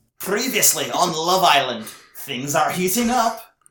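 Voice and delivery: high, loud, slow Scottish announcer voice. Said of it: "the announcer from Love Island, Ian Sterling".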